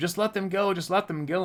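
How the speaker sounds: high shouting and yelling from several people. Retelling how bystanders in a store called out to a man: imitating people yelling. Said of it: "Some people are yelling at him".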